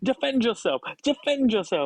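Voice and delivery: play-acted aggressive voice. Retelling what Tom said at breakfast, with a mock-aggressive imitation of Tom. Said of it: "Why are you getting so aggressive?".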